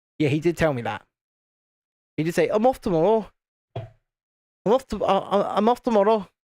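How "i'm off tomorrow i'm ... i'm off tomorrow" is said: odd put-on northern English accent, high and slow. While building something, quoting what he said to the speaker, in a weird northern voice. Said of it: "In his weird northern voice".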